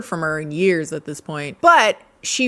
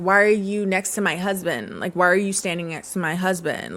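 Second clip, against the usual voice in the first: accusing, confrontational tone, spoiling for a fight; 4 dB quieter than usual. Retelling a wife's messages to another woman: imitating someone picking a fight. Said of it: "she wanted to fight".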